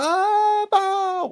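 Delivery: acted-out, very high, crying-out crowd shout. Retelling the crowd crying out to Baal: imitating people shouting. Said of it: "Aí o povo gritava".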